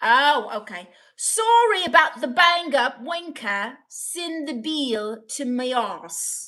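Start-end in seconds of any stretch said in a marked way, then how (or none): 1.2-6.5 slow, deliberate put-on Irish accent. Repeating a message someone sent, in a put-on Irish accent. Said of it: "Was that Irish?".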